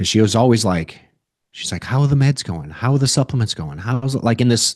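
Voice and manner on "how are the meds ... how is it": put-on, anxious, worried, negative tone. Retelling how she always asks about the meds: imitating a negative, worried tone. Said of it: "negative, worried tone".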